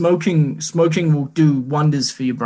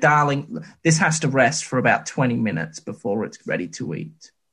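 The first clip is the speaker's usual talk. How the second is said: ordinary talk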